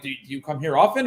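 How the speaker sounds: unsure, halting delivery, pitch rising at the end. Speaker demonstrating how people ask a pickup line: rising questioning intonation. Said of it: "tonality up at, at the end".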